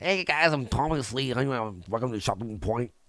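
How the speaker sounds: mocking, mumbly impression. Mocking a host's show intro, mumbly Tommy C impression. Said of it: "You fucking mumbly mess".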